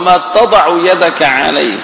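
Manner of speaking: plain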